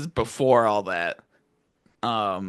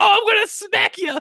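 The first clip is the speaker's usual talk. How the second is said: high, squeaky, very loud, mock-menacing voice. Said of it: "she was like".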